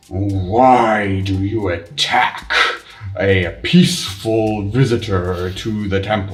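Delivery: growled through clenched teeth. One of the approaching creatures questions the attackers, growling through its teeth. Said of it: "one of them growls through its teeth".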